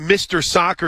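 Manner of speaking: plain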